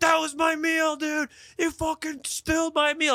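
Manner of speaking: put-on, very high, shrill screaming fit. Retelling a bump on the subway stairs: imitating a man screaming. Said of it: "He starts screaming at me like".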